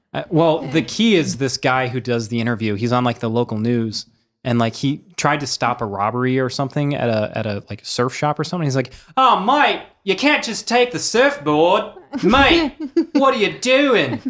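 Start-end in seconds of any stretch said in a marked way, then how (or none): 9.2-14.2 put-on very high Aussie bloke accent. Retelling a local news interview about a surf shop robbery: australian accent. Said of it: "tell the story with an Australian accent".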